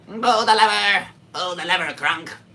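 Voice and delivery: very high, shrill, very loud lady's voice. Trying a lady's voice for the first time: imitating that lady's voice. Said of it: "the voice of that lady".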